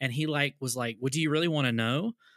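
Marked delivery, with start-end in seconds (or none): 0.9-2.1 mock combative, hostile, fast, aggressive delivery. Retelling a man's answer to a friendly greeting, mimicking an aggressive reply. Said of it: "he said it really aggressively".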